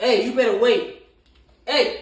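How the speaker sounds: shrill, very loud, high-pitched yell. Commanding an animal to sit and wait before eating, yelling. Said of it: "Sometimes you gotta yell, raise your voice like that".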